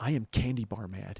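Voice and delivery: put-on through-clenched-teeth voice. Quoting her reply after hearing the speaker's news: imitating gritted teeth. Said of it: "I hear her kind of grit her teeth and she goes".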